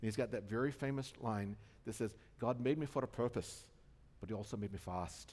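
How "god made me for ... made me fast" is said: put-on Scottish accent, slower pace. Quoting a famous Chariots of Fire line, in bad Scottish accent as Eric Liddell. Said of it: "I know it's a bad Scottish accent".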